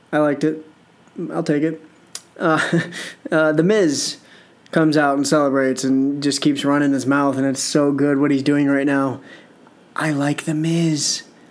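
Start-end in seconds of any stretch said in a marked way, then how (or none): 9.9-11.2 slow, secretive, half-whispered delivery. Recapping wrestling, admit something you don't want people to know, half-whispering. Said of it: "I'm whispering it because I don't want people to know".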